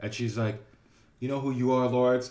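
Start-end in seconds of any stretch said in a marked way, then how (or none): 1.2-2.3 put-on upset voice. Retelling what an arts teacher said after a compliment: imitating an upset teacher. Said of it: "she got so upset".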